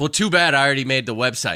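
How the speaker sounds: ordinary talk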